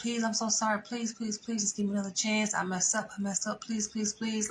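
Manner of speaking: soft, pleading, begging tone. Retelling how a man begged and pleaded, imitating someone begging. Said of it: "So he begging and pleading".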